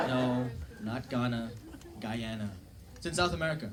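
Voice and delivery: plain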